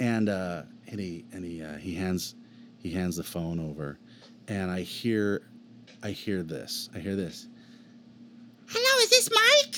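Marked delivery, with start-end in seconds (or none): 8.7-9.8 very high, loud character voice. Retelling a phone call where Elmo spoke to him: Elmo voice.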